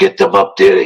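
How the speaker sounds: whispering voice. Retelling what a man whispered to him about the ball, retelling a whisper. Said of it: "So he whispers to me".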